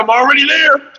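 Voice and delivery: very high, squeaky voice. Retelling an argument with himself, voicing his own penis. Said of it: "My dick was like".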